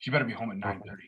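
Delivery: pretend menacing tone. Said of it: "the sinister look and just be like".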